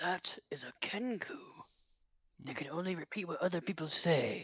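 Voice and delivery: soft, hushed, confidential whisper. Leaning in close to Gaxed, whispering to him. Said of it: "I whisper to him".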